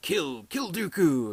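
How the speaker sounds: high evil voice. Retelling how Palpatine eggs Anakin on: Palpatine's evil voice. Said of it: "in his kind of evil voice".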